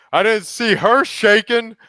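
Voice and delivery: shrill, high, loud, pointed scream. Retelling what a man screamed across the room during the speaker's dips, retelling a scream. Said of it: "he just screams from across the room".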